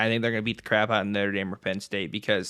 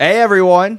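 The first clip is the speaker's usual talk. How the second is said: full-volume, very high, shrill screaming; 10 semitones higher, 14 dB louder than usual. Asked to bring more juice to a show intro, a speaker is screaming into the mic. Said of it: "You're screaming into the mic though".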